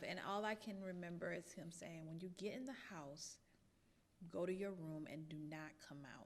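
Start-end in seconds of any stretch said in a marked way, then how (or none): 2.1-6.3 mock composed, very calm, even voice. Retelling a father's words to a child after cutting a dress: imitating dad speaking very calmly. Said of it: "I'm saying very calmly".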